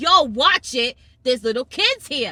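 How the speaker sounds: loud yelling voice. Retelling what a mom in front said to a cyclist: imitating someone yelling. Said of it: "the mom in front of me yells".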